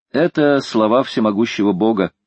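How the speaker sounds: usual speaking voice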